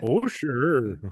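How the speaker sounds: thick, put-on northern Minnesota accent. Chatting with others about regional accents; northern minnesota accent. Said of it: "that's more like northern Minnesota".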